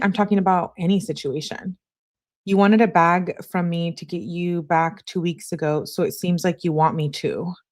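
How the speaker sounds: normal talking voice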